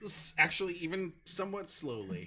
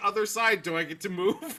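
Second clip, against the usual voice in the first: ordinary talk, nothing marked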